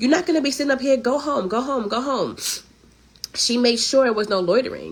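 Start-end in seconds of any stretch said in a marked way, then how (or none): 0.0-2.4 put-on Haitian accent, much higher. Retelling how the speaker's mom ordered loitering men home: imitating mom's Haitian accent. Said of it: "with her Haitian accent and be like".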